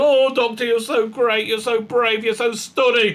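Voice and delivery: put-on sycophantic, fawning, adoring gush. Mocking the companions who praise the Doctor: imitating fawning companions. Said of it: "they're, they're".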